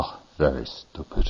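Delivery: tremendously disdainful, scornful tone. Retelling a Zen teacher's reply to a koan answer: imitating a teacher's disdain. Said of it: "he just kinda looks at me with tremendous disdain".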